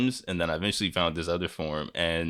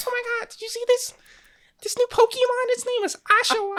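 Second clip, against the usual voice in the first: very high, loud, squeaky put-on voice; 5 dB louder than usual. Recalling early pokemon reveal videos, speaker redoes their old squeaky voice. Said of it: "the squeaky voice".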